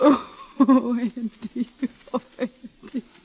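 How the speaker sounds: weeping. A mother telling her son that his brother died, crying. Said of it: "Don't cry, Ma".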